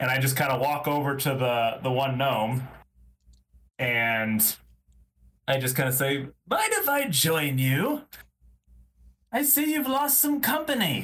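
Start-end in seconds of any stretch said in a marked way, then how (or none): 6.2-11.0 put-on drunk-sounding voice, very high and tipsy. A player's character stumbles over to a gnome to join it, pretending to be drunk. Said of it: "pretending to be drunk".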